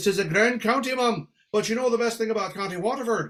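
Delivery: put-on Irish accent. Speaker retelling his reply to a woman from county waterford, in a phony irish brogue. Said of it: "What's with the phony brogue?".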